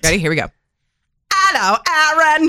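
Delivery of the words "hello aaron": put-on, pitched-up Cockney accent. Showing a practiced british accent to greet someone, in a cockney accent. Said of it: "That's Cockney".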